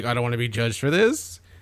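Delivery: mocking, put-on defensive tone. Teasing another speaker by imitating how they sounded: mocking someone sounding judged. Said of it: "You sounded very, like, judged".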